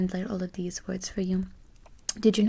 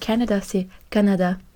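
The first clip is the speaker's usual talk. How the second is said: ordinary talk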